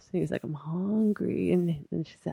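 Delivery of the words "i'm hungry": put-on drunk man voice, pleading. Retelling a man banging on a window late at night: imitating a drunk man. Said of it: "He was loaded".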